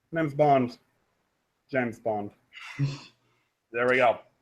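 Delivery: hushed, soft, understated, underplayed delivery. Showing others the Bond you impersonate best, after warning it sounds better in person, do a James Bond impression. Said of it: "he's usually the one I impersonate the best".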